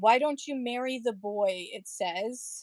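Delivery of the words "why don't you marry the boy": ordinary talk, nothing marked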